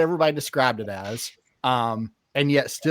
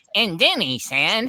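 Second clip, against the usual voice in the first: high, slow, awful narrator voice; 7 semitones higher than usual. Retelling an audiobook narrator's voice for a monster character: imitating a bad audiobook voice. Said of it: "the voice was so bad".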